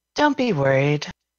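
unsettling, very creepy, eerie spirit-like voice. A game master voices something speaking into a player's ear, in a very creepy voice. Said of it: "In a very creepy voice".

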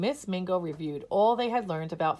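ordinary delivery

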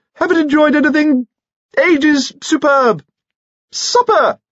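excited squeaking, very high-pitched. A man talks excitedly to a lady over a loud band, squeaky voice. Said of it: "he squeaked".

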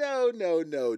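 playful teasing. Recounting a woman's reply to a friend's offer: retelling a joking no.

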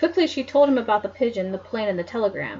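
ordinary delivery

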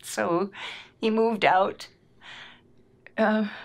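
crying, tearful voice. Speaker telling how Cameron moved out for his sophomore year, crying. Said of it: "I can't believe I'm crying already".

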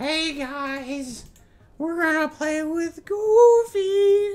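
squeaked out, high-pitched and loud. Imagining the thing on screen talking because it almost looks like the character, in a Mickey Mouse voice. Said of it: "Mickey Mouse voice".

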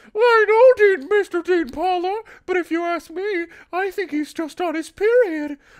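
shrill, grating, very high, very loud voice. Dean speaks to his younger brother Sam in an incredibly high-pitched annoying voice. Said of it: "an incredibly high-pitched, really fucking annoying voice".

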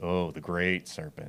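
put-on sarcastic tone. Retelling how people mocked the bronze serpent: imitating a very sarcastic remark. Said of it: "very sarcastically".

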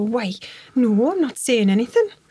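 put-on north-east English Newcastle accent. Retelling a girl's reply when others urged her to speak, in [name]'s Newcastle accent. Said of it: "I'm probably doing a Newcastle accent there".

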